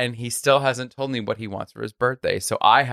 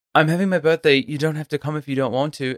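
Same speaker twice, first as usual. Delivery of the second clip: casual put-on British accent; 3 semitones higher than usual. Quoting Charlie about his birthday party: Charlie British accent. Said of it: "You did Charlie in a British accent".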